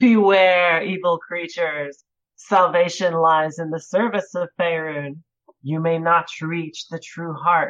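loud, booming yell. Speaking as her character, giving what she will call out, yelling out. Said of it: "She will yell out".

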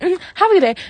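petty, sarcastic, high-pitched. Retelling what she said to a man after giving him his change, mock-sarcastic, petty. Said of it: "sarcastic kind of, like, petty voice".

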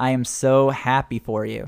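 low, flat, expressionless deadpan delivery. Answering someone who says they just became a forager, deadpan. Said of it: "She stares at you deadpan".

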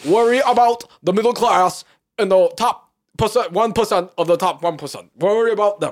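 put-on very loud, high-pitched, emphatic New York accent. Doing a Bernie Sanders impression while chatting about politics: Bernie Sanders accent. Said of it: "so what is that accent?".

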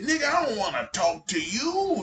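put-on high-pitched elderly man voice.

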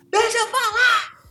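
shrill, fed-up, very high shout. Retelling an argument where he finally shouted at her: imitating him shouting. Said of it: "deu um grito com ela e falou assim".

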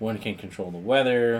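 ordinary talk

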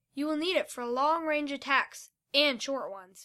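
ordinary delivery

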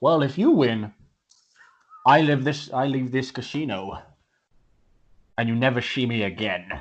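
smooth, suave English gentleman voice. An Englishman at the casino table answers the wager, in a suave Englishman voice. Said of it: "like a really suave-looking, tuxedo-wearing Englishman walks in and joins the table. / like a really suave-looking, tuxedo-wearing Englishman walks in and joins the table. / tuxedo-wearing Englishman".

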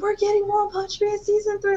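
acted-out screaming, very high and rattled off. Retelling a boyfriend's excited phone call: imitating boyfriend screaming. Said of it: "he was screaming".

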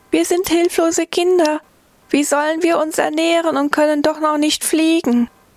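put-on high, squeaky, piping baby-bird peeping voice. A narrator reads helpless young birds calling from the foot of the oak: squeaky voice. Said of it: "Nun hörte er eine piepsige Stimme".

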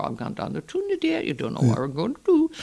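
put-on very high, fast, slurred, run-together Geordie accent. Speaker demonstrating an accent where the words elide, elided accent demo. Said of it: "I can talk like that".

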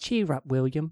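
put-on comforting British accent. Acting out a remembered exchange, voicing Lucy answering William; imitating Lucy's British accent. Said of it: "she had a British accent".

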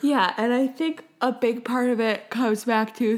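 speaking through a yawn. Answering a question on a podcast episode, yawning. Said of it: "sorry, I'm yawning".

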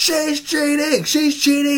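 acted-out yell. Recalling watching a wrestling match near dad, retelling a yell. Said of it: "I'm yelling out".

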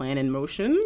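plain

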